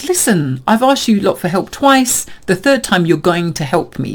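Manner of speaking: stubborn, defiant, firm insistence. Retelling what a sick friend meant about calling an ambulance: imitating a defiant tone. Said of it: "little hint of defiance where she's like".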